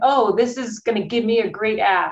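normal talking voice

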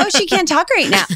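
very high put-on phone voice, jumped up octaves. Recalling answering the phone and talking to adults, voice going up really high. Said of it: "my voice would go up really high".

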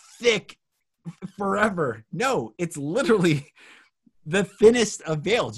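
excited and energized.

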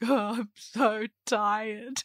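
put-on tearful, crying voice. Retelling feeding a newborn while exhausted, imitating own past crying. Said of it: "I was feeding her and I was just crying, like".

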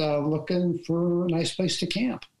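ordinary delivery

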